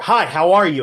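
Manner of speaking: near shout, loud, high, big projection. Demonstrating voiceover volume level four of five, near shouting. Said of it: "Level four".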